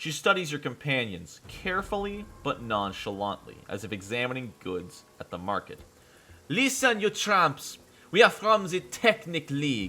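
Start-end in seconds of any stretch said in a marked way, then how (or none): 6.5-9.9 put-on French accent. Voicing a Technic League member addressing your companions: French accent. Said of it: "give the Technic League uh, a good accent. Bob the French!".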